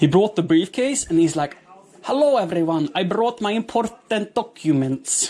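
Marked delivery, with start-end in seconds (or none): 2.0-5.3 attempted put-on Finnish accent, pitched up. Retelling a friend bringing beer in a briefcase: imitating a friend's Finnish accent. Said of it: "I'm gonna try a Finnish accent".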